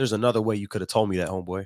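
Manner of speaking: plain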